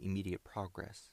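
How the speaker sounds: ordinary delivery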